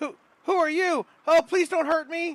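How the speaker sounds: very high, loud, scared, frightened pleading. Game master voicing Ruben speaking to a player's character, scared Ruben voice. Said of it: "he looks really scared".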